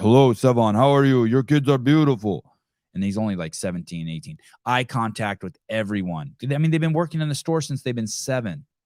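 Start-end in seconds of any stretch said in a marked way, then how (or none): 0.0-2.4 loud voice of a huge man. The speaker imitates the young store workers addressing him: imitating a super deep voice. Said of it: "Super deep voices".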